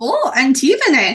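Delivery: put-on exclaimed in a Swedish accent. In a game scene, a character speaks in a Swedish accent. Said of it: "this is Swedish".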